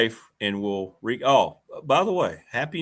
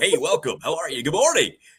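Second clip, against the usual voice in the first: over-the-top, exaggerated radio DJ announcer patter; 4 semitones higher than usual. Mocking how guys talk once they get a microphone, in an exaggerated radio voice. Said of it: "use the radio voice. ... this is how they want to talk".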